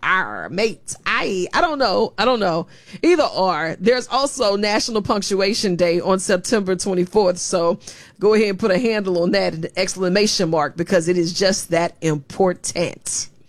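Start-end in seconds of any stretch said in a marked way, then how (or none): 0.0-0.9 put-on pirate voice, much lower. Talking about International Talk Like a Pirate Day, a speaker answers in a pirate voice. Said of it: "What is International Talk Like a Pirate Day?".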